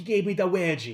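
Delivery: put-on villain voice with a Mexican accent. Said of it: "he's Mexican".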